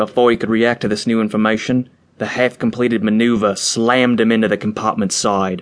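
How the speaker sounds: ordinary delivery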